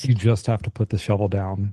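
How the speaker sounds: ordinary delivery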